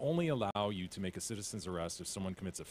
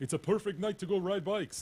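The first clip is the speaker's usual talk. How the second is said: put-on vampire-like Swedish lilt, very high pitch; 11 semitones higher, 4 dB louder than usual. Acting out bicyclists from Sweden in a story, in a vampire-like Swedish accent. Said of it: "Why do you sound like a vampire?".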